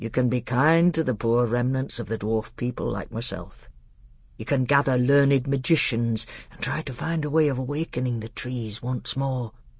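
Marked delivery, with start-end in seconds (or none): none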